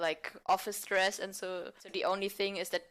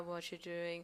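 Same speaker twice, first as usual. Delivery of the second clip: bored, flat, monotonous, much quieter; 10 dB quieter than usual. An actor demonstrates how their bored character sounds, in a bored, monotonous delivery. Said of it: "my character is very bored and so it's more like very monotonous".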